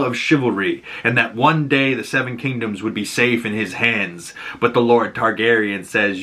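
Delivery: ordinary talk, nothing marked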